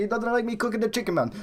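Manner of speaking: put-on thick, heavy Greek accent, spoken very fast. Quoting a man who was sent home, in a put-on heavy Greek accent. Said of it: "heavy Greek accent".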